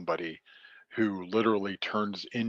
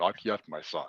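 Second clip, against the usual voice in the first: stately, regal king-of-gods voice; 3 semitones lower, 4 dB quieter than usual. Recounting a story scene, a father answering his son's plea, in an Odin voice. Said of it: "You got a great Odin voice".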